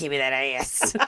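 creature voice. Improvising a scene where Krampus answers Santa: Krampus voice. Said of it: "in a Krampus voice".

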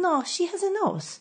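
put-on Israeli accent. Retelling a back-and-forth argument with a man, imitating his Israeli accent. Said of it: "in his Israeli accent".

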